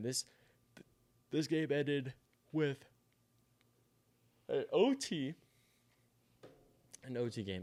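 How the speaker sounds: speaking through a yawn. Late at night, a host recapping a football game speaks through a yawn. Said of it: "I'm gonna keep yawning".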